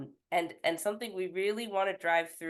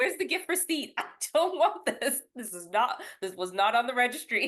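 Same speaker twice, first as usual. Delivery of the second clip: pitched-up, joking tone with laughter through it; 8 semitones higher, 3 dB louder than usual. Speaker jokes about unwanted gifts, acting out a reaction, laughing while joking.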